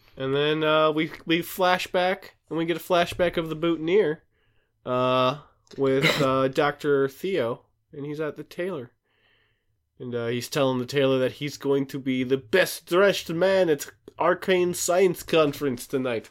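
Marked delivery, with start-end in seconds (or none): 11.3-16.3 put-on melting-pot mix of European accents. The speaker recaps a flashback of dr. theo at the tailor, in a mixed european accent. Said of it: "What was that accent?".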